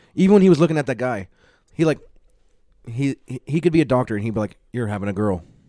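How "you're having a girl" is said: put-on stoic, deadpan, flat delivery. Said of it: "he'd look exactly the same".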